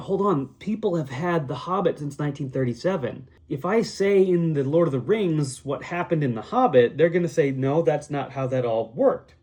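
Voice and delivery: normal talking voice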